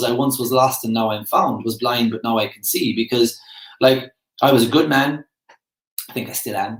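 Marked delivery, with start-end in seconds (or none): none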